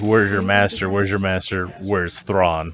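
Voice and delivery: plain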